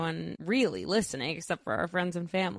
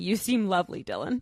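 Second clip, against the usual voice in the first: put-on cheeky, sassy tone. Retelling a reply to a comment on a reel: retelling own sassy remark. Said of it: "I respond with a sassy remark saying".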